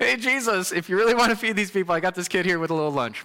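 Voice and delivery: dry, straight-up sarcastic delivery. Speaker paraphrases what a brother said to Jesus, in a mock-sarcastic retelling. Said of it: "That was straight up sarcasm".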